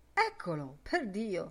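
ordinary delivery, nothing marked

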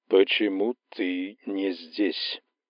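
thick, slow, dragging, viscous drawl. Narrator voices the being on the phone line: drawn-out, viscous voice. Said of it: "тягучий, вязкий голос, голос, идущий из глубин".

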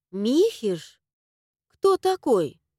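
surprised, astonished. Hearing an unfamiliar name from her aunt, a woman asks, surprised. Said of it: "Удивилась я".

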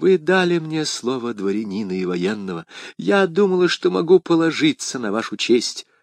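plain reading voice

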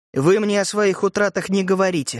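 ordinary delivery

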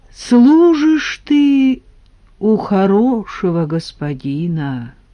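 thoughtful, musing tone. He answers a servant's question, thoughtfully. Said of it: "раздумчиво сказал Василий".

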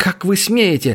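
worked-up, outraged. Tera pulls out of a man's grip and begins to speak, agitated and excited. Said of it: "возбужденно начала она".

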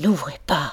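hushed, quiet, low voice. A woman speaks while someone at the door demands entry in the law's name, in a low voice. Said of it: "dit Fine à voix basse".

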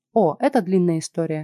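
ordinary delivery

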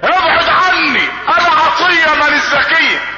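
high, screamed army sergeant voice. Retelling how a woman screamed and changed her voice, like a sergeant's. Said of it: "خلته زي صوت الشاويش".

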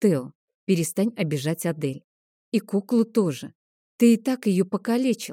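ordinary delivery

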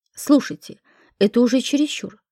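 usual speaking voice

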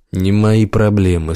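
plain

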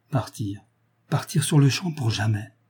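plain reading voice

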